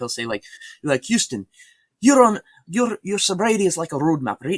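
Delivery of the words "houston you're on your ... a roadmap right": very high, loud, heavy Irish brogue. Doing a favorite impersonation of a man he talked with: thick Irish accent. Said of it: "he had a very thick, uh, Irish accent. ... I love doing this impersonation".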